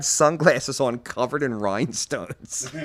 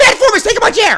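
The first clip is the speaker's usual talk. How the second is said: play-acted, very loud, very high, shrill, seething fury; 13 dB louder than usual. Telling about a man who took his chair, retelling his own seething retort.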